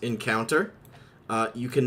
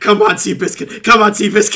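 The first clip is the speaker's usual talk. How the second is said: put-on pirate voice, cheering, higher and louder; 10 semitones higher, 12 dB louder than usual. Acting a flashback where Reggie bets on seahorse races: Reggie cheering on a seahorse. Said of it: "we flash back to Reggie".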